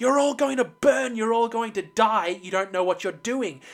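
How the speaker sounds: mock fearful, anguished screaming in terror and pain. Describing a scene where a villain is chained up by clones, acting out his scream. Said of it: "he screams".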